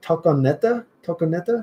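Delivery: high, uncertain attempt at a Spanish accent. Reading a viewer's El Paso suggestion aloud with an attempted Spanish accent. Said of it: "I'm trying to use a Spanish accent".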